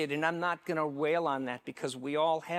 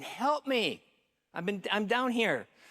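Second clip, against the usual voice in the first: high-pitched, pleading cry; 5 semitones higher than usual. Telling a joke, the man stuck in a hole calls out again; yelling for help. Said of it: "the guy yells again".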